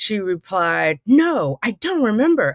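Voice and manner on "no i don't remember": high, loud exclamation. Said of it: "exclamation point".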